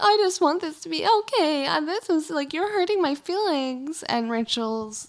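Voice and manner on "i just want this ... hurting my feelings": high, tearful, weepy crying voice. Retelling how Reagan spoke at a party, imitating Reagan crying. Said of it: "Reagan is crying".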